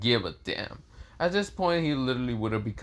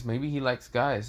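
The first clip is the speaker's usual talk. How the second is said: usual speaking voice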